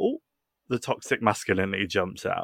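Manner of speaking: ordinary talk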